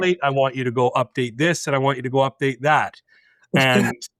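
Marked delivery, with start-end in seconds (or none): none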